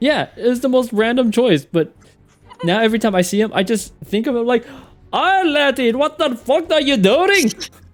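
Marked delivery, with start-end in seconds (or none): 5.1-7.5 put-on Scottish accent, man's voice. Imitating a bird's internal voice from the game: Scottish accent. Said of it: "localize his internal voice is to be like a Scottish dude".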